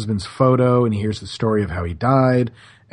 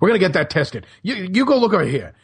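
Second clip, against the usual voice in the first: mock pitched-up shouting; 8 semitones higher than usual. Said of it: "he starts yelling at everybody".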